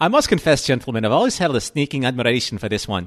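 put-on loud Scottish accent. Retelling a scene with Kirk and Scotty, doing Scotty's line in a Scottish accent. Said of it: "should I try a Scottish accent? I think I will".

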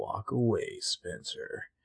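eerie, creepy, very hushed whisper, barely audible. Retelling a scene, imitating how Ezra says the line: creepy Ezra impression. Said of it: "the way he says it is so creepy".

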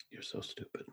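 very quiet soft delivery. Answering another speaker's pun: said very quietly after a pause. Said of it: "the way you paused and just said that very quietly".

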